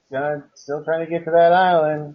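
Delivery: ordinary delivery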